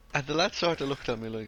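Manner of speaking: ordinary talk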